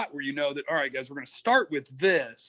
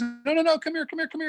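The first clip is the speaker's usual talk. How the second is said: mock, very high, hurried, rattled-off yell; 13 semitones higher than usual. Act out calling your off-leash dogs back as they spot another dog, retelling yelling at dogs. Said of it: "I'm like yelling at my dogs".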